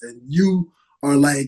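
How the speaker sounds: plain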